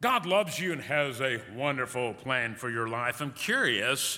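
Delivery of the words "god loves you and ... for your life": mock devout, sanctimonious, very pious churchy voice. Asking listeners whether anyone has told them this, imitating a very pious voice. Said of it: "with a very pious voice".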